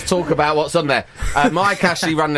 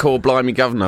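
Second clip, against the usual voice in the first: ordinary delivery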